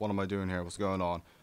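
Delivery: normal talking voice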